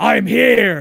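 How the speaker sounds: loud, rough, drawn-out yell. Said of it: "throws open the cape and just yells".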